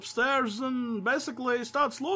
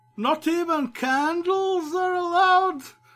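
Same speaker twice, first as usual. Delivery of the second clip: loud, blurry, slurred old drunk voice, acted out; 6 semitones higher, 5 dB louder than usual. Retelling how a man asked the dean a question, imitating a slurred drunk voice. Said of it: "asks in the blurry, slurred voice of a long-time alcoholic".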